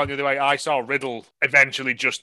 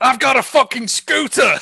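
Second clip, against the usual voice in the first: raw, very high-pitched, rough screech; 11 semitones higher, 6 dB louder than usual. Acting out a bit from this week's Botchamania for the others, imitating Randy Orton screaming. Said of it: "Randy Orton is just screaming".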